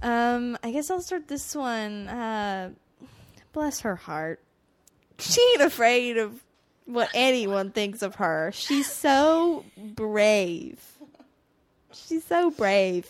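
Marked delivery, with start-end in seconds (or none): 3.5-13.1 loud, slow, heavily condescending tone. Talking about Phoebe, doing a condescending Reese Witherspoon impression. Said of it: "like, Reese Witherspoon in a very condescending tone".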